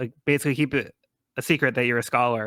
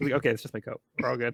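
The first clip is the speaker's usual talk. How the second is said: usual speaking voice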